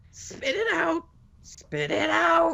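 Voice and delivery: very high, swooping, sing-song goblin voice. Speaking as a goblin in the scene, in a goblin voice. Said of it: "your goblin voice is fantastic".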